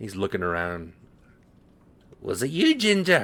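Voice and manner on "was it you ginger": put-on squeaky, very high, loud elderly dwarf voice. Voicing an elderly dwarf who stumbles up through a crowd: elderly dwarf voice. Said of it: "elderly dwarf ... he says".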